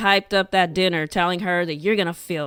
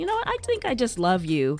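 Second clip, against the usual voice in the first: normal talking voice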